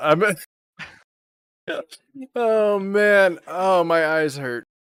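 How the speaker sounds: very slow, high, laugh-choked speech. Reacting to a joke about gigs, laughing hard while talking. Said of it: "because I'm laughing so hard, I'm tearing up".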